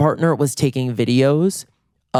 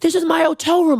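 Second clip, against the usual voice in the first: mock, very high-pitched screaming at top of lungs. Retelling a stranger in his hotel room screaming at him: imitating a man screaming. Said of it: "We both are screaming at the top".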